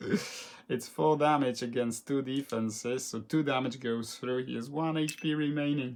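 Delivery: ordinary delivery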